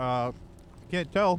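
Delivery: talking with mouth full. During the show intro, speaking while still eating; talking with mouth full. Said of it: "Stop munching".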